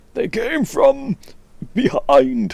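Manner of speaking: terrible put-on voice, very high and swooping. Commenting on a game, quoting the old gyrocopter saying: terrible gyrocopter impression. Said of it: "I know that was a terrible impression".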